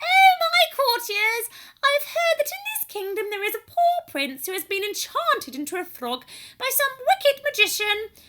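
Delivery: very high princess voice. Narrator reading Jodie playing a fairy-tale princess addressing her courtiers, high voice. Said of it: "then she said in a high voice".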